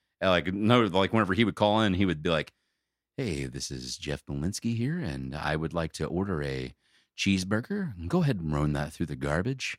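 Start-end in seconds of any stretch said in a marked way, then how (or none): 3.2-9.8 soft, hushed, smooth jazz morning-show DJ voice. Imitating a homeless caller ordering food: imitating soft jazz DJ voice. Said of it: "doing, like, a soft, de-, soft jazz D J, like, morning show".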